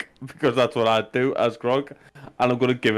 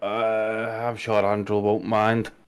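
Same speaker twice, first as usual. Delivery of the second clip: reluctant, begrudging, slow delivery with drawn-out opening uh; 2 semitones lower than usual. Speaking in character while paying the bellhops in gold: begrudging. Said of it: "I'll begrudgingly go".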